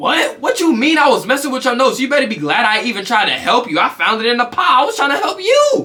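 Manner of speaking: sassy comeback with attitude. Retelling what was said to a sister: reenacting a retort with attitude. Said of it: "I said it with hella attitude".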